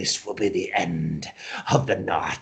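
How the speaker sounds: low, eerie possessed voice, laughing through. Voicing a possessed character who convulses and laughs: eerie changed voice, laughing. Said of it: "you hear a voice coming out of him saying".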